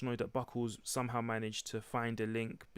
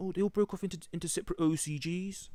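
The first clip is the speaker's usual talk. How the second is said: put-on Birmingham accent, pitched up; 7 semitones higher than usual. Quoting what Buckles says about the investigation, imitating Buckles' Birmingham accent. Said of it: "He's a Birmingham accent actually".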